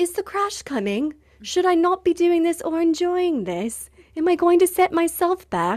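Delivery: put-on doubting British accent. Describing an inner voice of doubt that pops up: put-on British accent. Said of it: "maybe she's got like a British accent".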